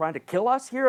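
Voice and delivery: high, loud scream.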